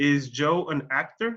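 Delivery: rising pitch on the word actor. Explaining question intonation in spanish, rising pitch on actor. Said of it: "Mi entonación sube al final de la pregunta".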